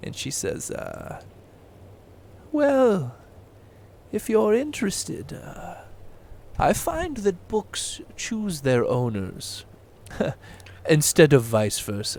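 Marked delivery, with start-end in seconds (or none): 2.5-12.2 put-on elderly woman's old lady voice. Game master voices an old human lady speaking to the players: old lady voice. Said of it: "It's an old human lady".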